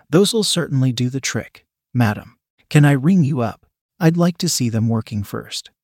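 ordinary delivery

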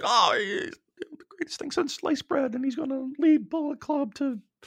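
very high, very soft, quiet voice. Discussing a wrestler, the speaker voices a hypothetical take in a high-pitched voice. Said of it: "I'm talking in a high pitch voice".

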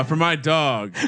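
shouting. Announcing a betting pick to another speaker, yelling. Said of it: "Why are you yelling at me?".

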